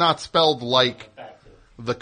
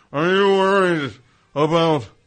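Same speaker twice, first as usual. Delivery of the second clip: put-on panicked commercial announcer voice; 2 semitones higher, 4 dB louder than usual. Imitating a satellite radio commercial: panicked Alan Thicke commercial voice. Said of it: "panicked commer-".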